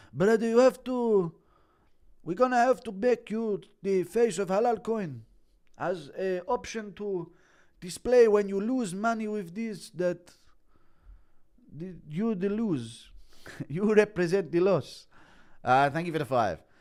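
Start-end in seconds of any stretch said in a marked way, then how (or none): 0.2-15.1 high-pitched, coaxing delivery. Islam tells Tagir he is the face of his new crypto scam; do an Islam impression. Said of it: "Impression of Islam telling Tagir".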